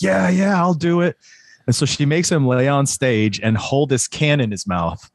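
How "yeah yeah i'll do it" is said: mock wild, revved-up, raging, high, eager voice. Retelling a fan volunteering during a show: imitating a raging fan.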